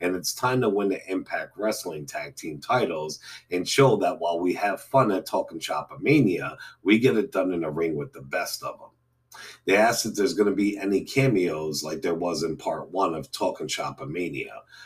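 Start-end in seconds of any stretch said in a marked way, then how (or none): none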